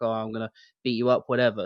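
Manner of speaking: mock tough, swaggering, badass wrestling-promo trash-talk voice. Describing a woman's promo while sitting on a real tank, imitating a badass promo. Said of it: "she's just doing like a badass promo".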